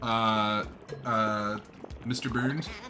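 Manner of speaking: plain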